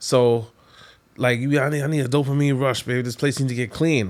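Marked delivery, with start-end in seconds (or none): 1.6-4.1 mock craving voice, higher. Retelling what a partner says, imitating partner sounding like an addict. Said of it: "You making me sound like an addict".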